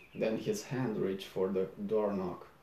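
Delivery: ordinary delivery, nothing marked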